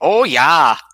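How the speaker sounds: loud, high-pitched Fargo accent.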